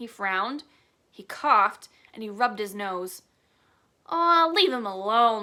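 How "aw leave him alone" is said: loud, growling pirate voice. Reading a story aloud, Pinky growling at Jack. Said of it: "Pinky growled at Jack".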